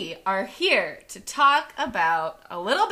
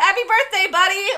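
loud, high-pitched; 9 semitones higher, 5 dB louder than usual. Retelling a player's birthday video message: imitating greeting a child. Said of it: "thought it was, like, a child's birthday".

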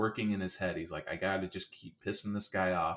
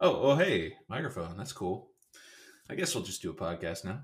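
feigned surprise, acting caught off guard. Pretending to walk into a party and find a microphone: acting caught off guard. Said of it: "like you just walked into a room of a party and saw that there was a microphone".

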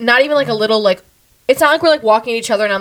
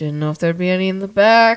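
put-on suggestive, flirty tone, pitched lower; 4 semitones lower than usual. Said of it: "Why are you trying to turn this sexual?".

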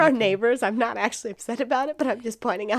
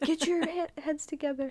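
mock shouting, higher pitched; 6 semitones higher, 7 dB quieter than usual. Imagining everyone reacting to a fumbled saying: imitating people shouting. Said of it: "shouting at you".

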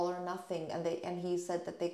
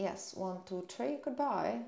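slipping into a British accent. Saying goodbye after asking for sponsorship, slipping into a british accent. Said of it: "half an episode in an accent".

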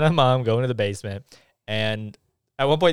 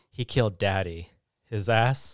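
ordinary delivery

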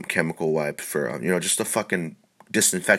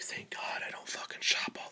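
put-on mutter under the breath, much quieter. Retelling what they said under their breath behind slow shoppers, muttered. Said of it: "I said under my breath".

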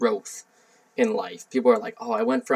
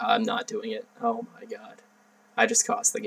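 put-on panicked tone, much softer; 5 dB quieter than usual. Recalling the moment they cost the game, retelling own panic. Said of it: "that game, game gave me anxiety".

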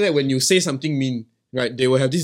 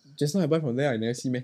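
prim, softened, dainty ladylike manner; 6 dB quieter than usual. Showing a softer way to answer: dainty, softened manner. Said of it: "Then you look a bit more dainty".

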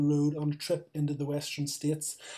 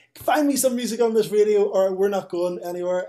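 loud, all-out screaming; 4 semitones higher, 8 dB louder than usual. Retelling a film scene where a character screams at her partner: imitating Laura Dern screaming. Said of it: "gets out and screams at Nicolas Cage, like".

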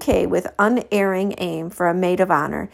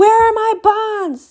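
piercing, shrill, very high-pitched shriek; 5 dB louder than usual. Suddenly, without any warning, she lets out a shrill scream. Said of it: "Carlotta let out a shrill scream".

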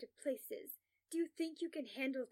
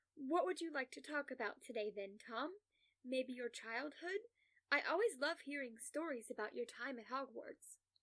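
ordinary delivery

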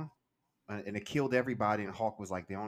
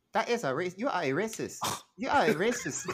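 poor fake Nigerian accent, very high and loud; 10 semitones higher, 5 dB louder than usual. Told by others to hit it again, repeating the line in a bad Nigerian accent. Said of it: "It got worse".

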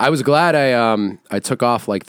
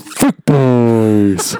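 put-on creepy villain voice, louder; 5 dB louder than usual. Joking about chicken tenders: put-on horror game villain voice. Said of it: "sound like something a villain would say".

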